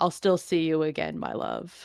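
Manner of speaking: whispered, fading voice under the breath. Voicing a dying woman shot in the lung: dying words under her breath. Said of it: "under her breath".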